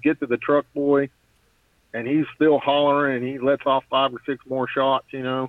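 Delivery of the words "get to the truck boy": usual speaking voice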